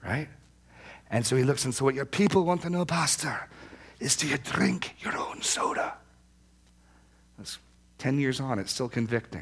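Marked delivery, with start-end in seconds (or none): 1.8-5.9 heavy, thick Scottish brogue, pitched up. Retelling a man's question to the pastor, in a thick Scottish accent. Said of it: "in his thick Scottish accent".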